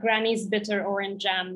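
normal talking voice

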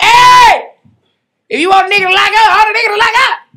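loud, high-pitched yelling.

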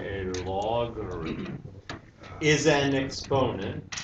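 very slow, word by word, low and soft. Defining a logarithm again for listeners, saying it slowly. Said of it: "maybe I have to say it slowly".

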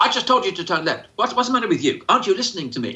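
put-on exasperated sat-nav voice, impatient and scolding. Contrasting a calm GPS with an annoyed one: imitating an impatient scolding GPS. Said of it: "It doesn't go".

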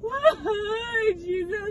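put-on sobbing.

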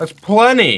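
high-pitched shouted yell. Telling another player there is enough wood: yelling. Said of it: "why are you yelling at me?".

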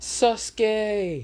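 shrill excited fangirl scream. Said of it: "just jumps and screams".

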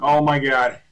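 loud, alarmed, panicked outburst. Trying to fix something on stream and making it worse: panicked exclamation. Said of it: "I'm panicking".

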